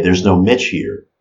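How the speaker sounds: normal talking voice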